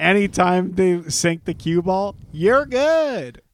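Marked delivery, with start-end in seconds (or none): 2.3-3.3 high sarcastic praise, not meant, "good" drawn out. Retelling a chat message sent when an opponent sinks the cue ball: retelling a sarcastic remark. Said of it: "only sarcastically".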